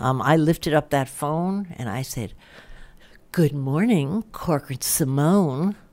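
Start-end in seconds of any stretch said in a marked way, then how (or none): 3.3-5.7 slow, stressed Simone. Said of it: "with an accent on the Simone".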